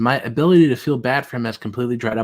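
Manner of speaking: normal talking voice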